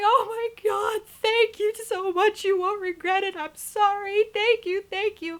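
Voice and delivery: mock, very high, tearful, crying, gushing voice. Retelling being given one more chance to keep a scholarship: retelling crying, grateful pleading. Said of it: "I'm crying and I'm going".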